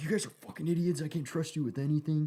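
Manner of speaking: put-on high, scolding yell. Retelling how the squad leader yelled at them: imitating someone yelling. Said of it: "yelling at us about that".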